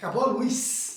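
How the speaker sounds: plain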